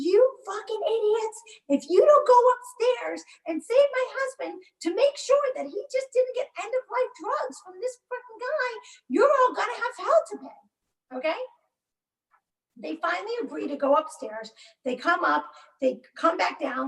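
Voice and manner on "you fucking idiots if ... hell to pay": high-pitched screaming rant. Recounting screaming at the officers, retelling a scream. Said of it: "and I'm screaming at them".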